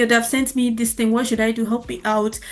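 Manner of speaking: plain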